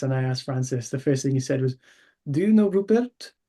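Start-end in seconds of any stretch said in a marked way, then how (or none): 2.3-3.3 deliberately bad French accent, loud and high. Retelling the first thing Francis asked: Francis, terrible French accent. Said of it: "In my terrible French accent".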